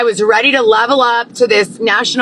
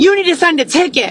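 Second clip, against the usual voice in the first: extra-nasty, mean, pitched-up delivery; 6 semitones higher than usual. Speaker recounting a woman repeating her ticket demand, imitating a nasty tone. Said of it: "but like nastier than me".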